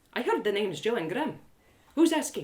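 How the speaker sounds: ordinary delivery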